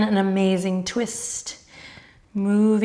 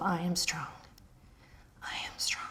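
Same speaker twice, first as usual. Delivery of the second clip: soft, very quiet whisper; 3 semitones lower, 14 dB quieter than usual. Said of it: "Quietly whisper to yourself".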